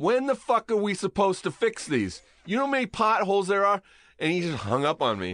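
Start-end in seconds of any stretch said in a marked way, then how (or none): 0.0-3.8 high, put-on New York city-worker accent. Retelling a late-night phone call with a man, speaker imitates a New York accent. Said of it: "He's like very New York too".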